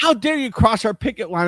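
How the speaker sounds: put-on high-pitched kid's yell. Retelling how a kid at the picket line yelled at them: imitating a kid yelling. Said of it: "one kid yelled at me".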